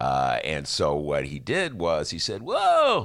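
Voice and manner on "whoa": awful shrill bad put-on voice, very high, loud. Retelling what a politician said, in a terrible Joe Biden imitation. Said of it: "that's my Joe Biden imitation".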